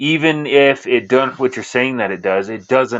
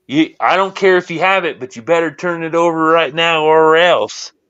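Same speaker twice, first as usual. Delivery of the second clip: menacing, threatening tone, pitched up; 5 semitones higher than usual. Retelling agents knocking on doors: imitating threatening agents. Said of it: "They're threatening".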